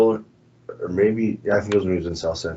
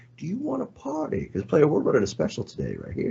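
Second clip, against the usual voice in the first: high, swooping street pimp hustler voice; 8 semitones higher, 4 dB quieter than usual. Retelling a comedian's bit where a pimp at the door offers a party: imitating a pimp. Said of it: "This is a pimp".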